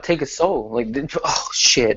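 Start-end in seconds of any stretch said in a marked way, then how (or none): 0.0-0.7 calm, matter-of-fact, slightly higher voice. Retelling a quote that made their day: imitating Robbie Lawler's calm delivery. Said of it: "just because how calm he was when he said it".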